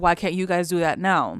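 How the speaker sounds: ordinary talk, nothing marked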